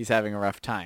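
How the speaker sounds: ordinary talk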